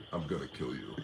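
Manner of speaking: very deep, very soft, hushed dog voice. Imitating what the speaker's dog says, in a low-toned dog voice. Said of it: "In a low tone voice".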